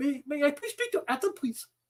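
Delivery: put-on telemarketer voice, Indian accent. Ranting at telemarketers, mimicking their call opening in an Indian accent. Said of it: "my Indian accent".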